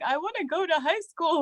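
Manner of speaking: acted-out tearful voice, high, mid-cry. Retelling asking to go to high school: retelling own past crying. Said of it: "So I remember crying".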